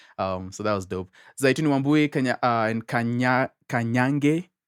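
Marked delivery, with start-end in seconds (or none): 1.4-4.4 foreign-sounding pronunciation. Speaker reads out an artist's full name, pronounced like a foreigner. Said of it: "I pronounced that like a foreigner".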